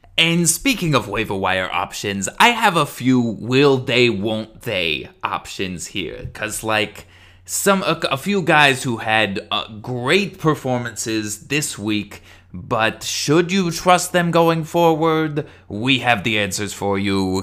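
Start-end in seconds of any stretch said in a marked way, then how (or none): 7.5-17.5 quiz-show announcer style, game show host voice. Host introducing waiver wire options to listeners, game show host voice. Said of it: "You sound like a game show again".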